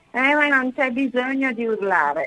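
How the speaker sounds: normal talking voice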